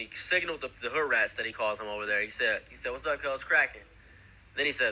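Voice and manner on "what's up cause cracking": ordinary talk, nothing marked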